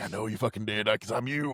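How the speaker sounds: put-on mocking villain voice. Retelling how Mister Hyde in the reflection taunts Jekyll: mocking Mister Hyde voice. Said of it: "fucking mocks him".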